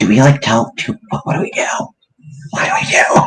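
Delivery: soft, partly whispered voice. Player turns to the party with a worried question, kind of whispering. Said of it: "kind of whisper".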